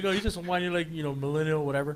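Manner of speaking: ordinary talk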